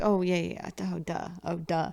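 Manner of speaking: put-on under-the-breath muttering. Retelling being watched while working, imitating muttering under breath. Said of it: "talking to myself ... under my breath".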